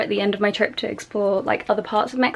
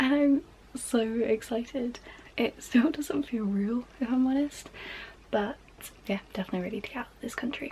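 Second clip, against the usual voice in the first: quiet, soft, excited half-whispered chatter; 3 semitones higher, 8 dB quieter than usual. Talking to viewers at four A M before leaving for Mexico, half-whispering. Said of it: "I am whispering because right now it is about four A M".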